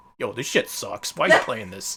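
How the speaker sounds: menacing, confrontational tough-guy tone. Imitating the game's Mario turning to the camera: imitating a threatening Mario voice. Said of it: "he's just gonna suddenly turn to the camera and be like".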